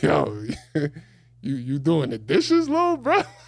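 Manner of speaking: mock amused teasing, half laughing, swooping pitch. Retelling a relative teasing him about dishes: imitating someone laughing at him. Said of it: "and he's laughing at me".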